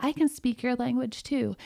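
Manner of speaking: usual speaking voice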